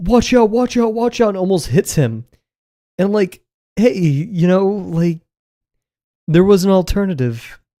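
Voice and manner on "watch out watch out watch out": mock high scream, repeated over and over. Retelling how she nearly hit him: imitating someone screaming. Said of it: "she starts screaming".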